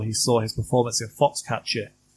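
ordinary talk

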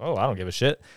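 plain

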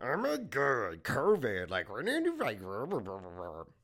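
swooping, sing-song frog-puppet voice with swinging pitch. Mocking a state governor's talk about covid: Gretchen Whitmer impression. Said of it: "This is my impression of Gretchen Whitmer".

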